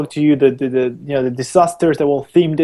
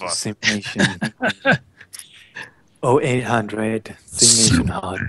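creepy, sultry late-night radio voice, lower and quieter; 5 semitones lower, 5 dB quieter than usual. Retelling how he voiced over the Welcome to SimNation video; creepy midnight radio sex voice. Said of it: "creepiest midnight radio sex voice".

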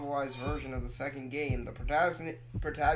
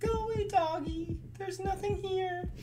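frightened, scared coaxing, pitched very high. A streamer playing a game pleads with a ghost dog, scared. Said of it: "I'm scared".

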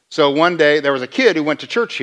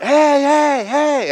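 put-on very high, stretched-out, screamed hey calls; 13 semitones higher, 3 dB louder than usual. Recounting running beside him and shouting after him, retelling screaming. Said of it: "and I'm just screaming".

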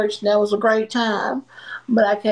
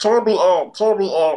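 thick, clogged, phlegmy, gunky-throat voice; 2 semitones lower than usual. Imitating how the other speaker just sounded: phlegmy throat. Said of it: "That's what you sound like".

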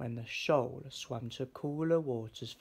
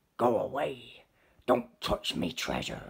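grumpy, growled lobster voice with swooping pitch; 2 semitones lower, 4 dB louder than usual. Reading a story, a lobster counting coins growls at the searching fish. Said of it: "the lobster growled".

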